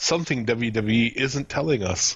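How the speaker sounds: ordinary talk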